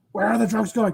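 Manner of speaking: dark caped-crusader superhero character voice. Trying out character voices for friends, doing a Batman voice. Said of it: "Oh, you like that voice?".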